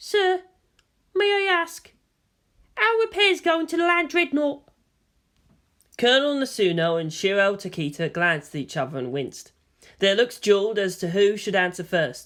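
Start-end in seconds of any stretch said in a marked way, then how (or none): 0.0-4.6 tiny, very high little voice. After the fight, she asks the officers a question, in a very tiny voice. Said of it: "in a very tiny voice".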